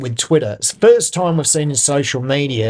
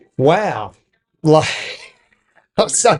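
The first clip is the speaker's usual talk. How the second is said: talking through laughter. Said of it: "I can't stop laughing about it".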